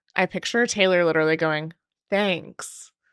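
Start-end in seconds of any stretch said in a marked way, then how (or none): 2.1-2.9 acted, ironic, sarcastic, brush-off one-word delivery. Picturing someone's reply to being called bad news: mock-sarcastic thanks. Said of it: "Like sarcastically".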